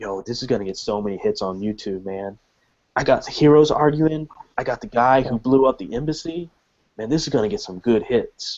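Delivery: imitated, hushed whisper. Acting out what a guy whispered to his buddy, retelling a whisper. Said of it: "You hear him whisper to his buddy".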